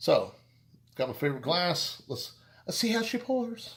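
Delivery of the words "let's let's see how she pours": worst bad fake Irish accent, pitched very high. Pouring a beer into a favorite glass on camera, worst Irish accent. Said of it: "In my worst Irish accent".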